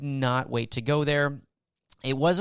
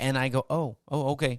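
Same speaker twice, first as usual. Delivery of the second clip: ordinary talk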